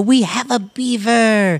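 thrilled, excited, very slow and drawn-out delivery. A player explains why his character lifted another character: excited announcement. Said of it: "I wanted to excitedly lift you and go".

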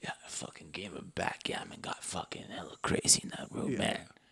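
very soft, breathy, seductive whisper. Imagining how he told about his night in the room, in a put-on sexy voice. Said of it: "in sexy voice".

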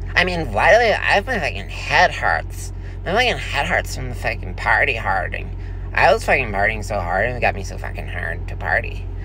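hungover-sounding effeminate put-on voice.

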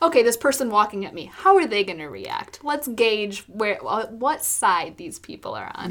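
ordinary talk, nothing marked

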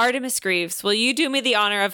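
usual speaking voice

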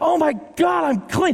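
mock, loud, very high, ecstatic joyful shout. Acting out a healed man realizing he is clean: imitating a loud joyful shout. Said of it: "Of course he lifts up a loud voice".

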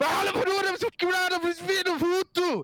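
very high, drawn-out hollered shout. Retelling how a Swedish person shouted over the balcony: imitating someone shouting. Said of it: "just shouts".

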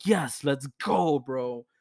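very slow, stretched-out, drawn-out excited cheering. Retelling being allowed to go to a party: retelling own excited cheer. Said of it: "I'm fucking excited".

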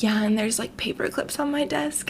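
joking, put-on sexy, fake seductive voice. Retelling a joke about office supplies: imitating fake dirty talk. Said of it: "continue talking in that voice".

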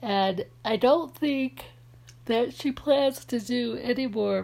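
speaking through a yawn. Chatting about a favorite TV show: yawning while talking. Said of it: "pardon my yawn".

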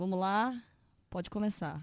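easygoing, meek, gentle, mild delivery. Retelling how the director starts a take: gentle voice imitating Clint Eastwood. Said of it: "Ele fala com a voz mansa".

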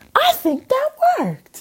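voice pitched very high. Retelling what a mother said after a healing session, imitating her mom. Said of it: "I'm talking like my mom".

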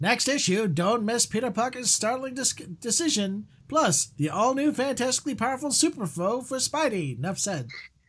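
hyped, excited comic narrator voice. Announcing the next comic issue: Stan Lee voice. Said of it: "I love that Stan Lee voice you made".

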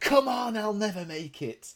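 mock frantic scream, shrill, very high pitched. Retelling a wanted man stuck in traffic: imitating someone screaming. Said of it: "so he's screaming out".

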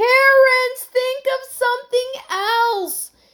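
very high, loud, drawn-out shout. Heidi calls to Terence as their boat sinks, shouting. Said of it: "shouted Heidi".

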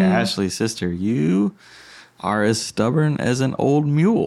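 gentle, affectionate tone. Retelling what he said to ashley: imitating a loving tone. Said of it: "as lovingly as you possibly can".

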